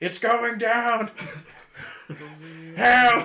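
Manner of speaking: booming, loud voice. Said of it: "use thaumaturgy to boo my voice".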